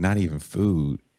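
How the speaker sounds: put-on heavy, thick, laid-on Southern accent. Speaker retells what a man said back to a woman: thick Southern accent. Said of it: "he has a very thick Southern accent".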